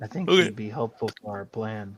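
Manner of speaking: very low, hushed mutter under the breath. Speaking in character to Cruz standing beside them: said under the breath. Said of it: "I'll just kinda say under my breath".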